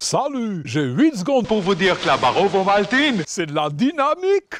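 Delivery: Swiss-accented French, pitched a bit high. Introduced as the voice of the Ovomaltine ad, he performs it in a Swiss accent. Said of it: "cet accent suisse".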